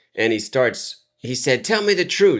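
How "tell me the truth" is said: put-on angry voice, higher. Retelling being questioned about a teacher by a mad father: imitating an angry father. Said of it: "he was so mad".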